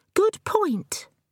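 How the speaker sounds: very high-pitched, gloating, triumphant crowing. Ellen backs up a question put to the narrator, crowing. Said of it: "Ellen crows".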